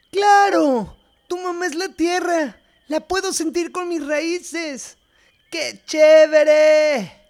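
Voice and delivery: drawn-out, very high, slow excited yell. Narrator reading Doma's line to Core; shouting. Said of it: "Doma gritó".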